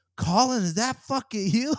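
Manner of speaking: stunned, disbelieving. Retelling an actor recognizing a costumed colleague on set, imitating someone shocked. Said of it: "He looks shocked".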